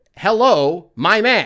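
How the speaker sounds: put-on thick Chinese accent. Retelling how a group greeted a man, in a thick Chinese accent. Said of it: "in the most like stereotypical thick Chinese accent".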